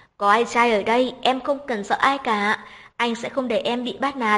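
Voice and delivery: plain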